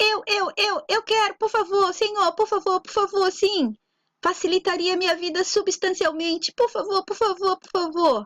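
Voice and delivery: impatient, begging, high, eager shouting. Reading a joke aloud, a character interrupts to ask: eager shouting. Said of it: "ansiosíssimo, interrompeu gritando".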